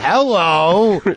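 high, loud hello, stretched out way up high.

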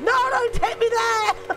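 shouting. A streamer going down in a game, yelling. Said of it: "I'm yelling".

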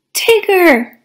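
sudden, high-pitched exclaimed outcry. Reading a character recognizing a friend who has untangled himself, exclaiming. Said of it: "Pooh exclaimed".

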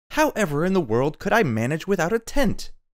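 very high, loud cry of dismay. Narrator reads a woman's reply to a man's advice, cried out in dismay. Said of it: "cried Mercedes, throwing up her hands in dismay".

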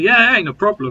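dry, clearly insincere sarcastic yes. Reacting to a two-on-one handicap match being set up, sarcastic. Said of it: "I'm just going to sarcastically say".

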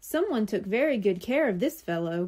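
ordinary delivery

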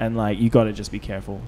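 normal talking voice

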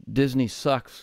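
ordinary delivery

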